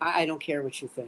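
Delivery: low, muttered put-on voice. Announcing an impression in conversation, Bill Belichick impression. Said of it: "here's my impression of Bill Belichick".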